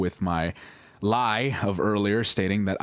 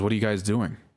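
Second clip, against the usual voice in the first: put-on, very angry tone. Retelling how her mother caught them kissing: imitating an angered tone. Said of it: "A very angered tone".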